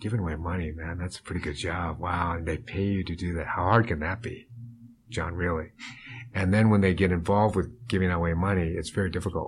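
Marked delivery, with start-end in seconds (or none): 0.0-5.7 voice dropped right down, low and hushed. Retelling what wealthy people say to him about his job, in a lowered voice. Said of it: "they will lower their voice".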